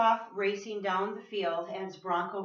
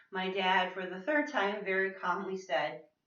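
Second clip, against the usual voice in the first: ordinary talk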